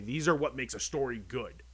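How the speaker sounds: usual speaking voice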